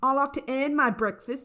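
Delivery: deliberate put-on Australian accent, played up. Reading out a quote from a newspaper article: Australian accent. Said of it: "I should do an Australian accent".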